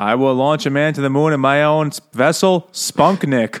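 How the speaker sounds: put-on Boston accent. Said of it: "funnier with the Kennedy's stupid accent".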